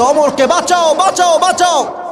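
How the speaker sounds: high, loud, frantic shouting.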